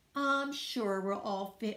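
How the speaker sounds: ordinary delivery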